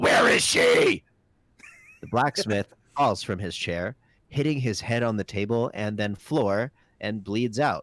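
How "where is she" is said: rough, raised, loud superhero shout, barked out. In a tabletop game, a character slams the desk and shouts in a Batman-style voice. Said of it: "shout in a Batman-style voice".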